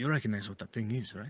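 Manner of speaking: whispering in put-on voice. Voicing a character who quietly asks Ronnie about a thing: whispering in character. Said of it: "he kind of whispers to Ronnie".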